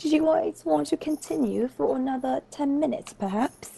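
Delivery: abruptly British-sounding voice. Speaker asking the group whether to continue another ten minutes; sudden British accent. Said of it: "Why did you suddenly turn British?".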